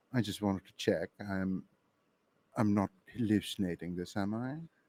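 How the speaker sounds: hushed, soft whisper. In a game scene, a character checks with a companion: whispering. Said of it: "and I'm whispering this".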